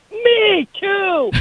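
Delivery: mock sudden, high, blurted-out yell. Retelling how their dad yelled out and ruined her line, retelling a yell. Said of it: "And he yells out".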